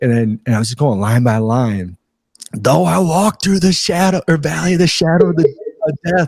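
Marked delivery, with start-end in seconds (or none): 2.5-6.3 acted full-out, high-pitched screaming. Speaker re-enacts screaming line by line over the radio mic, retelling screaming. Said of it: "and I'm just screaming it".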